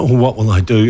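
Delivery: ordinary delivery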